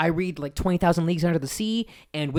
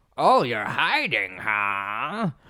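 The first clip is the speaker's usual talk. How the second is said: put-on old man voice, lower; 6 semitones lower than usual. Retelling how the old man reading a book speaks to a hiding kid: imitating the old bookstore man. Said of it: "this guy is reading this book, and he's saying".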